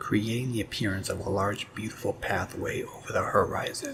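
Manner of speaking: plain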